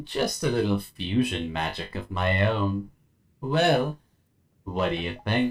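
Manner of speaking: seductive, alluring royal voice, seduction laid on. Voicing the Empress answering a question about Risky, seductive Empress voice. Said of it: "hope you like the seductive Empress voice".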